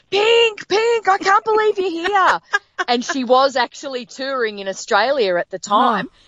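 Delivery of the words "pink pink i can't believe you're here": very high, loud, thrilled, excited yell. Speaker retells a woman in a passing car calling out to her, retelling a woman yelling. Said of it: "just starts yelling".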